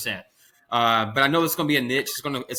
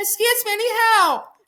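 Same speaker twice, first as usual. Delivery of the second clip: put-on woman's voice, very high and slow; 4 dB louder than usual. Retelling a prank on cops clearing a house: put-on woman's voice. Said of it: "I did that woman's voice".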